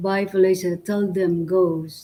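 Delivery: ordinary delivery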